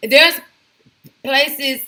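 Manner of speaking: loud, high, aggravated stutter.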